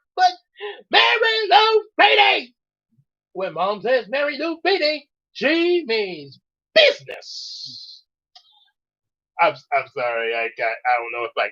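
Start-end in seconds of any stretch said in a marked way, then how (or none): 0.2-8.1 very high, slow, swooping cartoon dog voice. Showing how he would sound as a dog: dog voice. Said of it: "how he would sound as a dog".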